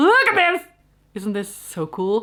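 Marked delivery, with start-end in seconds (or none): 0.0-0.7 very high, thrilled, excited shout. Showing off a cactus, yelling with excitement. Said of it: "Sorry for yelling".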